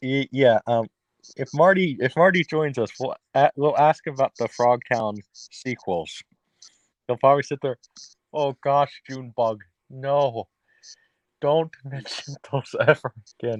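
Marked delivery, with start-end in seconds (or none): 8.3-13.6 terrible put-on Irish accent. Imagining Marty's reaction to the Frogtown sequels, speaker imitates him in a bad Irish accent. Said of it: "that was a terrible Irish accent".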